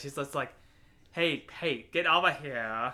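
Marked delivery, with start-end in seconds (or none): 1.1-2.9 very slow, stretched, drawn-out calling voice. Mocking how a movie character delivers a line: imitating a movie character's line. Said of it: "I swear she says it like that".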